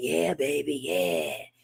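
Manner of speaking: husky, seductive come-on in a male voice. Showing what nobody wants to hear: imitating a husky man's voice. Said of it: "husky ass man saying".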